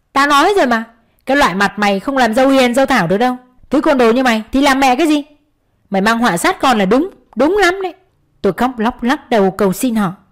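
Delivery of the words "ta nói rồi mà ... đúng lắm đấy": berating, abusive, cursing. A mother-in-law rails at her daughter-in-law, loudly cursing. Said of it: "lớn giọng chửi bới".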